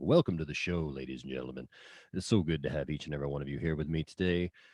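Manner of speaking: low-pitched, put-on late-night radio host voice. Joking that the show feels like late-night radio, speak as host: low late-night radio host voice. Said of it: "I got to kind of talk with a low voice and be like".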